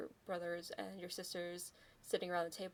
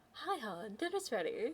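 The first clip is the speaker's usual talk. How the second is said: very sweet, sugary, high motherly voice; 5 semitones higher than usual. A game master voicing a player character's mother, in a very sweet voice. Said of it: "with a very sweet voice goes".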